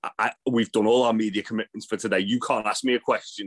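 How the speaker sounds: put-on angry, indignant, high, furious tone. Retelling a camera guy's question being refused: imitating a furious Joseph Connors. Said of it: "Joseph Connors is furious".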